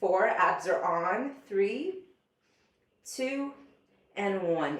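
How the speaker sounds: very slow, drawn-out, trembling, shaking, strained delivery. Leading an ab exercise, counting down a hold, shaking voice from effort. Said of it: "You can hear it in my shaking voice".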